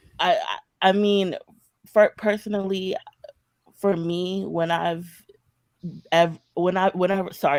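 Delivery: nervous, halting, stammering, tripping over words. Answering someone's question about being a fence sitter, nervous and stammering. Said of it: "I'm very nervous".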